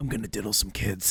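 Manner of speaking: very low, dropped-down slasher-villain voice. Speaker shows off a famous impression: Freddy Krueger impression. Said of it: "That's my famous Freddy Krueger impression".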